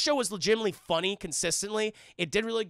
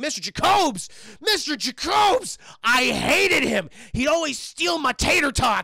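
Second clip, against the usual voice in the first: loud, pitched-up, mad, adamant angry rant; 6 semitones higher, 5 dB louder than usual. Retelling an ex-prisoner's answer about an old acquaintance, mock-angry. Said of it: "He was very mad about the tater tot theft".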